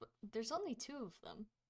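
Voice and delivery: very quiet, hushed, leaning-in half-whisper. Voicing a character who leans in to another: half-whisper. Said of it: "gonna lean in and whisper".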